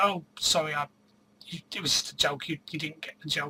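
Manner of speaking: usual speaking voice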